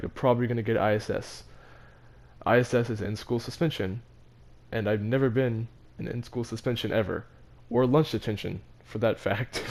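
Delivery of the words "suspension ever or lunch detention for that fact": ordinary talk, nothing marked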